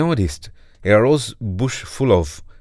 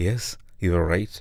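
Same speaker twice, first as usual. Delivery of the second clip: usual speaking voice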